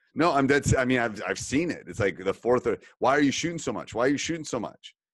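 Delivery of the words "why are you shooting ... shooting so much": mock low-key, mild shout. Retelling how the top three players yell at the fourth: imitating players yelling. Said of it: "start yelling at the".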